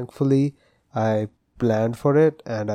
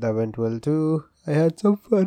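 talking through a yawn, much higher pitch; 5 semitones higher than usual. Podcaster recounting their day to listeners, yawning while speaking. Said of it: "I am yawning".

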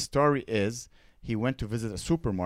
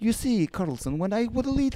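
put-on Russian accent, pitched a touch higher; 11 semitones higher than usual. Imitating an interview translator who speaks like Putin: Putin's Russian accent. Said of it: "he has that accent when he speaks".

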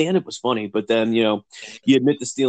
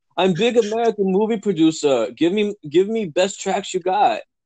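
put-on broken English; 7 semitones higher than usual. Imagining a filmmaker asking a studio for music, Tommy Wiseau broken English. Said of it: "This guy doesn't even barely speak English".

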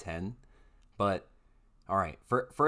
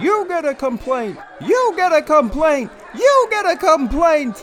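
ear-splitting, shrill, very high and loud screaming; 16 dB louder than usual. Acting out a scene with Oprah complaining: screaming Oprah impression. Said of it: "Oprah would be like".

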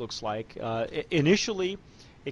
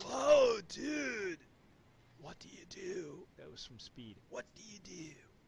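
bad put-on surfer-dude voice, higher, quieter; 6 semitones higher, 7 dB quieter than usual. Tasting tequila with a co-host, doing his worst Keanu Reeves impression. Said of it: "in my worst Keanu Reeves".

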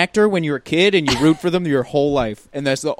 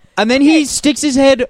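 usual speaking voice

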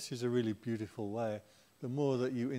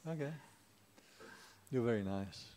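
ordinary talk, nothing marked

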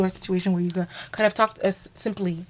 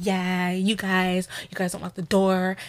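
put-on prissy tone; 4 dB quieter than usual. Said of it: "Her personality is very prissy".

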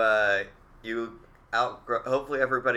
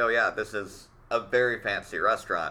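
ordinary delivery

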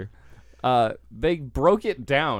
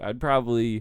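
normal talking voice

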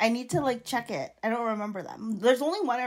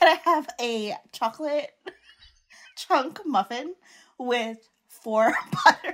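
put-on giggling and laughing through the words; 2 semitones higher, 3 dB louder than usual. Reenacting an order from a muffin shop at another's request, reenacting own past order, laughing. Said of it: "say exactly what you said to the girl".

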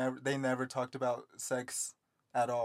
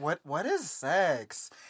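put-on little kid voice, childlike; 3 semitones higher than usual. Retelling asking a boy in the lunch line a question, in a little kid voice. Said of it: "The little kid voice in me".

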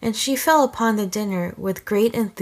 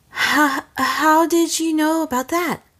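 choking, sputtering, catching breath, high and slow; 7 semitones higher than usual. Narrator reads Ray's reply after she chokes on a question about her book; sputtering, catching her breath. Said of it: "sputtering as she tried to catch her breath".

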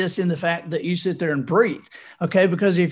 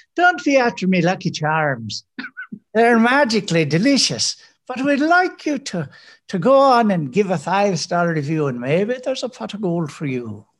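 cartoon leprechaun voice with put-on Irish accent. Asked by a co-host, speaker addresses listeners in a leprechaun voice. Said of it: "Could you ask in a leprechaun voice".

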